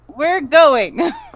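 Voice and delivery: frustrated character voice. Voicing Cora as they are let through, in a frustrated Cora voice. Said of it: "I say that in Cora's voice and not my voice being frustrated".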